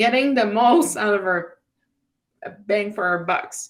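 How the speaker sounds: laid-on-thick sarcastic delivery. Reacting to low education spending figures: super sarcastic. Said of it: "And please read the sarcasm".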